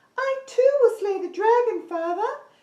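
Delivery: very high, loud, forehead-placed princess voice. Leading a group voice exercise, demonstrating a high forehead princess voice. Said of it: "you can hear it's quite up here".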